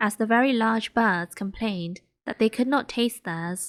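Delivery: ordinary delivery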